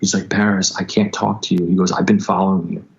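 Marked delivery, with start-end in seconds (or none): 0.3-1.6 mock-tearful weeping man's voice, slower. Retelling a man who followed them, imitating a man weeping. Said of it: "he's just standing there weeping".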